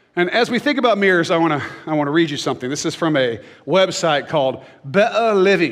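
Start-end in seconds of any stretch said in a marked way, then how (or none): 4.9-5.8 rough, not-great put-on British accent. Reading the name of a British website, in a put-on British accent. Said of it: "That's why I said it like that. Probably not a great British accent".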